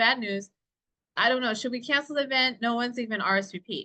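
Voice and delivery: ordinary talk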